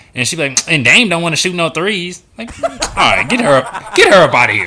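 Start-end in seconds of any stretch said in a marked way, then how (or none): 0.7-2.2 put-on complaining ratchet girl voice, pitched up. Imitating a female coach complaining about a player: imitating a ratchet girl. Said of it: "you sound like a ratchet girl".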